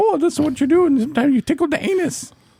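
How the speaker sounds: put-on very high, deliberately bad old-lady voice. Describing Doctor Ruth to friends, very bad Doctor Ruth impersonation. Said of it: "Do a very bad impersonation of her".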